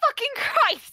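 very high, loud, shrill outburst. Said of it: "Sorry I'm so loud".

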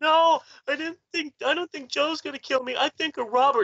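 mock tearful, weepy pleading, very high-pitched. Retelling own childhood words explaining to mom, imitating own past crying. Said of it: "with tears running down my face to explain to my mom".

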